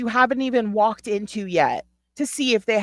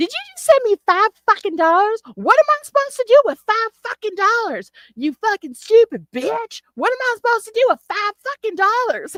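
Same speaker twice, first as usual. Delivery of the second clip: very high-pitched rant, sounding unappreciative and ungrateful; 12 semitones higher than usual. Thanking Owl for five dollars, the speaker imagines Heather's reply: imitating Heather's ungrateful rant. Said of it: "now if I was Heather, I'd be like".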